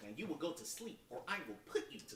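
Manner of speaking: soft, hushed, in-character voice. Quizzing the others on a movie quote, doing Ben Stiller's movie-line voice. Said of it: "I'll even do the voice".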